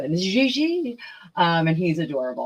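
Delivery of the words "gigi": put-on French accent, drawn out on one word. Saying a good friend's name, Gigi, with a French accent. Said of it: "I always do it with a French accent".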